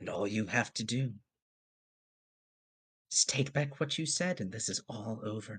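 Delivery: dark, hushed voice, almost half-whispering. Narrating a scene, voicing a dark voice speaking in the listener's ear: dark, almost half-whispering voice. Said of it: "the dark voice is like almost whispering".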